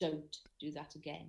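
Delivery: play-acted grave, dead-serious, low voice. Retelling the producer's warning after laughing on stage: very serious voice. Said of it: "in this very serious voice".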